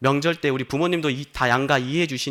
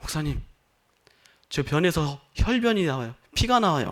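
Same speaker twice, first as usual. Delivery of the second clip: mock voice quavering throughout, trembling, shaky. A pastor retells a deacon's phone call, imitating a trembling voice. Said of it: "떨리는 목소리로".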